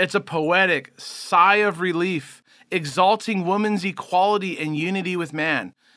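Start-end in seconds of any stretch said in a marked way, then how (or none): none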